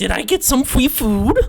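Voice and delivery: put-on high, loud, half-monster harpy creature voice. Voicing a harpy who stares at the players: put-on harpy voice. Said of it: "I can't do a girl's voice".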